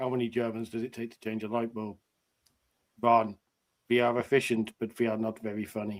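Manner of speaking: dry, flat deadpan, no comic lift. Showing how to tell a joke about germans: deadpan joke delivery. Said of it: "you just say it actually deadpan".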